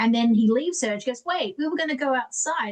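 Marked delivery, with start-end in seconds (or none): 1.2-2.7 tiny, small little voice, pitched up. Retelling what she said once he left her, in a little voice. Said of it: "that little voice".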